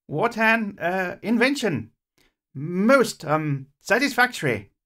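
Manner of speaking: self-satisfied, proud gurgle, slow, halting and high. Narrator reads the inventor's line to Mike, Beaker's proud gurgle. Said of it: "That was [name]'s voice. / he said. / so as not to hurt the inventor's feelings".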